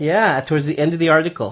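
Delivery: ordinary delivery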